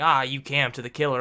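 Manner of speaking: ordinary talk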